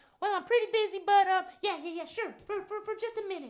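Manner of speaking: very high-pitched puppet-style voice. Voicing Mama Robin, who answers that she is busy: Mama Robin puppet voice. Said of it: "Mama Robin, can you come sit".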